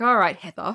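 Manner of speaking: mock contemptuous, scornful tone. Retelling a movie scene, imitating a teacher who hates her student. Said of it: "she clearly fucking hates Heather".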